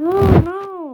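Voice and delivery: high, loud frustrated yell.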